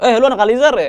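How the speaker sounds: loud, high-pitched, challenging schoolkid-like voice.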